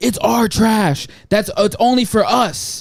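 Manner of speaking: high-pitched yell. Retelling what a neighbor yelled at his wife, imitating a man yelling. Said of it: "yelling at his wife".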